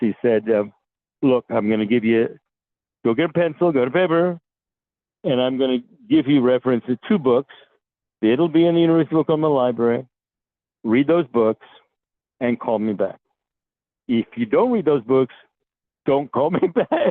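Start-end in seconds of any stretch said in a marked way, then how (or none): 1.2-17.1 paternal, fatherly tone. Retelling what a man told him on the phone: imitating a fatherly voice. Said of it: "in a kind of a fatherly voice".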